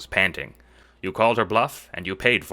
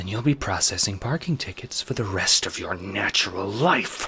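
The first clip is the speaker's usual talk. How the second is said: spoken through gritted teeth, clenched jaw. The Queen answers a subject's challenge, through gritted teeth. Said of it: "the Queen says through gritted teeth".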